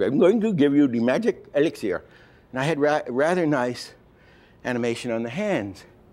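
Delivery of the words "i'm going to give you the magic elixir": loosely put-on Indian-accented voice. Retelling what she said, in a sort of Indian voice. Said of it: "It was a sort of Indian voice".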